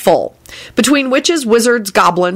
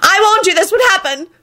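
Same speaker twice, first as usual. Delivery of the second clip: shouting, pitched very high and shrill; 10 semitones higher than usual. A man staggering to his feet after the trolls leave, shouting. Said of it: "Percy shouted".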